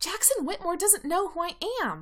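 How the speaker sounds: shrill, loud protest, pitch swinging all over. Erica joins Allison and Lydia's argument about Jackson, shrilly. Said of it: "Erica says shrilly".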